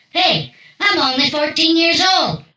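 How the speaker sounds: acted high-pitched drunken smart-aleck voice. Retelling yelling back at a police officer: imitating his own drunk yell. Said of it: "in my highly intelligent, drunk eighteen-year-old voice, yelled back".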